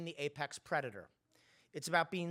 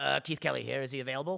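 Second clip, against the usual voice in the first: loud, gravel-inflected voice; 3 semitones lower, 5 dB louder than usual. Retelling a colleague's phone calls to big shots: imitating Keith Kelly's gravelly voice. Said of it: "in his famous gravel-inflected voice say".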